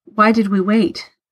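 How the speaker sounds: ordinary delivery, nothing marked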